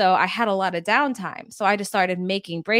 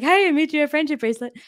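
put-on higher, childish voice like a twelve-year-old; 8 semitones higher than usual. Retelling giving someone a friendship bracelet, sounding like a 12-year-old. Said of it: "I sounded like a 12-year-old".

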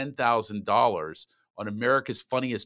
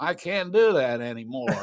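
put-on slow, frail older voice. Retelling what Don Knotts said after the Barney line. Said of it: "he turns to me and goes".

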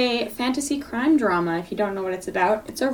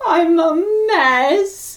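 put-on British accent, higher and louder; 8 semitones higher, 6 dB louder than usual. Imitating the other speaker in a put-on British accent. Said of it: "me trying to be you in my British accent".

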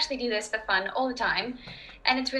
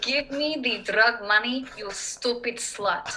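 tough, badass Russian accent. Showing a favorite line for getting into a russian accent: russian accent. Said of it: "my favorite way to get inside of a Russian accent".

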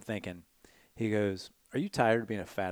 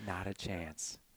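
play-acted, dismissive, dripping with disgust; 2 semitones lower, 10 dB quieter than usual. Retelling a girl turning down a dance: imitating a disgusted refusal. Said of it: "with this look of absolute disgust".

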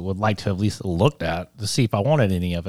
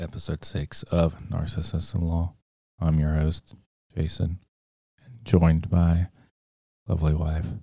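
extremely sad, mournful voice; 3 semitones lower than usual. Podcast host introduces the episode and his co-host wife in a very sad voice. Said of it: "You sound just like the saddest person in the world".

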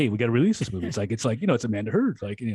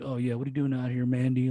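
put-on Southern Texas drawl; 4 dB quieter than usual. Imitating an actor's southern drawl in a movie: imitating a southern drawl. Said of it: "drawl or Southern drawl".

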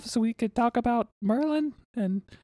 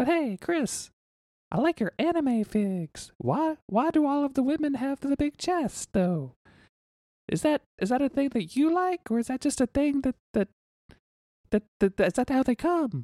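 put-on talking like a little kid. Pretending to be a child asking Chris for advice: playing a child. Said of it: "I'm Child [name]".

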